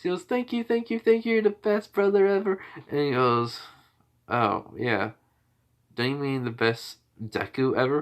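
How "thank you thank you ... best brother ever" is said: very high-pitched, rapid, excited screaming shriek. Retelling a sister thanking her brother for choosing her: retelling a scream. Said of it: "she just starts screaming".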